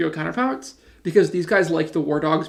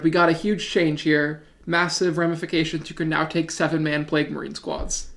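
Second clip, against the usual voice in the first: usual speaking voice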